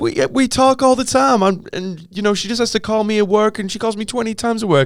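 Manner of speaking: put-on high-pitched voice. Retelling a man's line from a show, imitating a high-pitched voice. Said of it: "he kind of talks in this high pitched accent".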